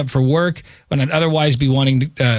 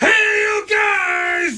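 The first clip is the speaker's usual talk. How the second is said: very high excited shout with guys drawn out. Showing how the Sloth line should sound: imitating an enthusiastic Sloth shout. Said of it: "instead of".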